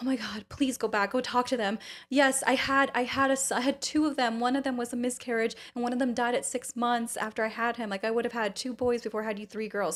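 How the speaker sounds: emotional, welling-up, pleading voice. Retelling a phone call, imitating her mom getting emotional. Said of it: "she started getting emotional".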